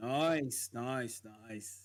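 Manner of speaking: put-on Australian or British accent. Responding to someone's news of a new job, in a put-on Aussie or English accent. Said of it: "Is he putting on an Aussie".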